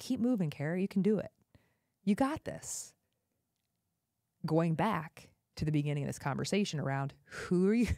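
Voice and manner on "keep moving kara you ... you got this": tender, kind, loving encouraging tone. Retelling words said to oneself on a painful walk: imitating a loving half-whisper. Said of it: "lovingly whispering to myself".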